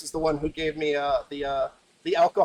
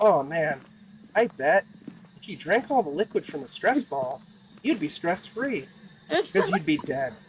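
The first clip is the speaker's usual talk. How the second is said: offhand, throwaway aside; 2 semitones higher than usual. Retelling a dark joke a coworker made, imitating Daniel saying it quietly. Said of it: "he'd say it so quietly".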